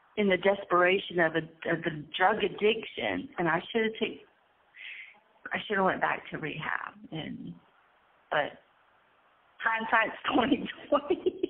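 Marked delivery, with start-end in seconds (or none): 9.7-11.4 nervous laughter through the words, slightly higher. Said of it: "I'm laughing, but it's not funny".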